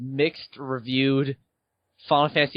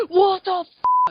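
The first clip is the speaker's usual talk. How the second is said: mock, very high, shrill and loud outburst; 5 dB louder than usual. Retelling how another player yelled at the TV: imitating someone yelling loudly. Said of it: "you were just yelling".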